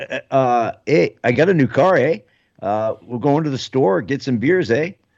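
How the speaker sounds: put-on, thick, heavy Canadian accent. Asked whether they do a thick Canadian accent, trying a thick Canadian accent. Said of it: "thick Canadian accent".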